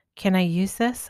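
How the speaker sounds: playful, lightly teasing tone. Reading a story aloud, the narrator asking about a milk can: playful tone. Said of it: "a playful tone in my voice".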